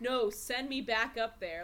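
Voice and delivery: ordinary talk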